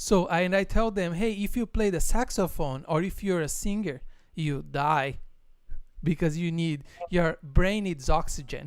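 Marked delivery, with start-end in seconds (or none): none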